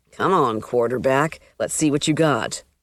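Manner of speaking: ordinary delivery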